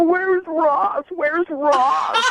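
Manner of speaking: very high, very slow, drawn-out calling voice. Retelling an ex looking around a pizza place: imitating her searching. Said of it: "as you're looking around, go".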